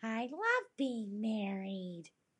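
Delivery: creepy little doll voice, very slow, very drawn out. Act out a cracking bride with mascara running down her face, in a creepy little doll voice. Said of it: "Like a creepy little doll".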